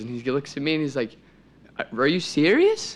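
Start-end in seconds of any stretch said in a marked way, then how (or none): 2.0-3.0 play-acted incredulous tone, loud and high-pitched. Retelling a companion's reaction to his plan to shoot a deer, mock-incredulous. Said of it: "He couldn't believe it".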